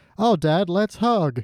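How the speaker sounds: stiff, awkward, stilted, very slow delivery. Imitating a father-son scene from the episode: awkward stilted line reading. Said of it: "this awkward".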